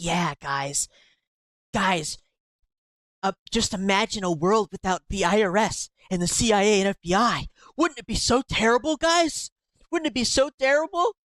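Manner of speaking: play-acted earnest, impassioned delivery, rising pitch. Act out the guy who got up on that stage, imitating someone speaking passionately. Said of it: "he says it so passionately".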